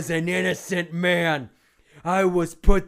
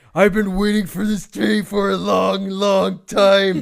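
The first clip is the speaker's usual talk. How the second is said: loud, angry bellow in wrestling-villain promo style; 2 semitones higher, 4 dB louder than usual. Reading a wrestler's promo aloud: Nailz impression. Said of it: "it also sounds like Ultimate Warrior".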